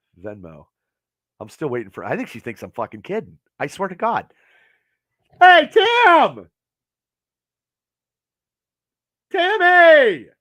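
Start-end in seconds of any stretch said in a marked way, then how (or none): 5.4-10.2 very loud, shrill, drawn-out holler. On a live show, calling out to tim about a beer: yelling a name. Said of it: "I didn't mean to yell at you".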